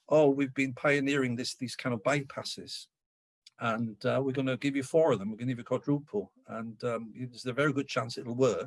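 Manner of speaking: ordinary talk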